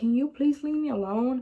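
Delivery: mock-scared, tearful, crying voice. Retelling a frightening encounter, acting out your own scared, crying plea. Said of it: "I started crying because I was just that scared".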